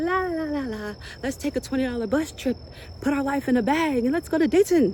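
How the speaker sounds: light, flimsy, whimsical daydreamer tone. Acting out the listener's flimsy, whimsical side, imitating a flimsy, whimsical self. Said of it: "flimsy, whimsical you is just out here like".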